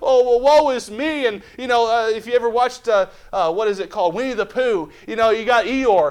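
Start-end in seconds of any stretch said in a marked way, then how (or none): 0.0-1.3 slow, put-on sulky lament. Acting out wanting to sulk in a difficulty: mock sulking. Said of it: "I just want to sulk and I want to say".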